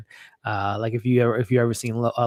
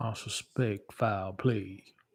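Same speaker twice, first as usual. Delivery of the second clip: slow, put-on Kentucky drawl; 10 dB quieter than usual. Doing an impression for viewers: Daniel Craig's Kentucky Fried CSI accent. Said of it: "Daniel Craig's Kentucky Fried C S I accent".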